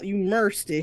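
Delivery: mercy said in a Southern drawl. Comparing pronunciations, showing how it's said down in the south, southern accent. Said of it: "like we do down here in the South".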